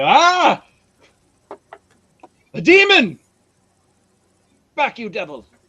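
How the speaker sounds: high, loud, swooping, utterly surprised exclamation. Voicing a scorched robed figure who sees someone emerge from smoke: utterly surprised cry. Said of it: "badly scorched and utterly surprised to see".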